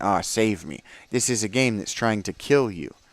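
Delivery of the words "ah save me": helpless, giving-up plea for rescue. Imitating a teammate giving up in a game: imitating a helpless plea for rescue. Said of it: "throwing your hands in the air and saying".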